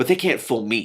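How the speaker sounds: short-tempered, snappish, irritable tone. Reading a story aloud, the princess dismisses kings and princes: snappish. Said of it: "She spoke so snappishly".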